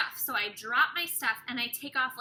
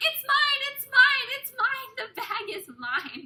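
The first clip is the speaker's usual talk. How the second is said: acted-out frantic, desperate, very high, loud pleading; 13 semitones higher, 5 dB louder than usual. Speaker retelling running up at the gate to claim her bag, retelling frantic pleading. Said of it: "frantic girl who's running up and I'm a mess".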